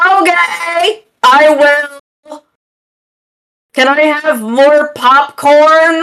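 play-acted, high grandma hollering, with drawn-out "I". Retelling a movie outing with grandma, imitating grandma yelling. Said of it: "when she's yelling".

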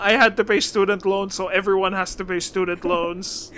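plain

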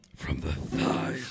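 rasping cartoon-villain whisper. Riffing on a story with others, sounding like Dr. Claw. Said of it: "You sounded like the claw from Inspector Gadget".

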